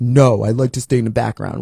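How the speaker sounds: very deep, low, bass-heavy man's voice. Quoting a man's reply to the speaker, in his very deep voice. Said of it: "he has a very deep voice".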